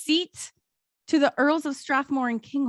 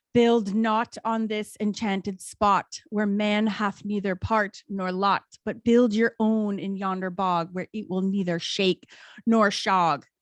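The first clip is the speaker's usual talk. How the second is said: dark, ominous, portentous, foreboding voice. Telling a story, acting out the mysterious voice the workers heard, in an ominous voice. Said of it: "this ominous voice".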